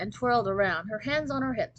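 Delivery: ordinary delivery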